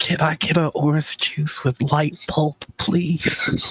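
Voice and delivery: awkward, self-conscious tone. Leaning over to the bartender to order in character: awkward. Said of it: "real awkward".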